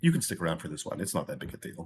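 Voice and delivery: low, hushed whisper. Player's character leans over to a companion during a spell: whispering. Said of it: "I'm whispering".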